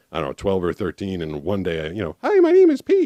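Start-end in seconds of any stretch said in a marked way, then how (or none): 2.3-3.1 put-on very high, loud boy's voice, unbroken. Retelling how the voice sounded before it changed at twelve: imitating own voice before it changed. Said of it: "And I sounded like that".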